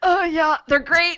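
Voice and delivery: constipated-sounding strain. Asked by the co-host to tell listeners about the new merch; strained, constipated-sounding. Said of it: "I sounded constipated when I said that".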